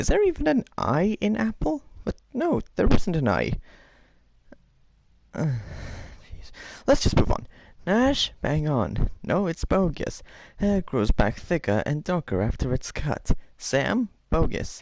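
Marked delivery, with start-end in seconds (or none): 0.0-2.6 very high-pitched, squirrely voice. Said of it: "Okay, Squirrely".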